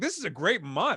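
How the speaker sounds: ordinary delivery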